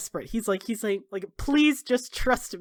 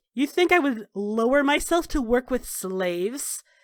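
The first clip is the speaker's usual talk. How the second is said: sneering, scornful, contemptuous tone. Narrating a scene, voicing her reply to an offer of help, sneering. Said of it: "she sneers like".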